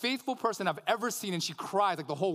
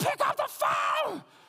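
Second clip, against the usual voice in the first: mock very high, shrill, drawn-out top-of-lungs screaming. Retelling screaming at a woman from inside her closet: retelling a scream. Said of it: "screaming at the top of my lungs".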